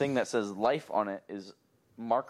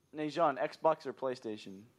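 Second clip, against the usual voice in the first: plain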